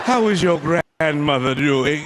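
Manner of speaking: slow, weary, dragging drawl. Imitating how morticians talk, all slow and weary. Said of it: "be talking all slow and weary".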